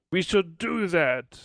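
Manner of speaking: mild, light exclamation, called out. Narrator voices one character in a group: yelling.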